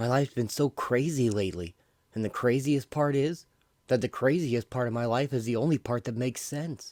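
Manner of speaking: ordinary delivery, nothing marked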